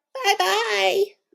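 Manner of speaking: high squeaky put-on voice. Reading a Goldilocks story aloud, a narrator voices a bear calling goodbye: high squeaky voice. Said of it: "a high, squeaky voice calling to her".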